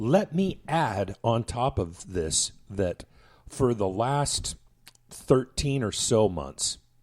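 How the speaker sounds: slow, drawn-out speech.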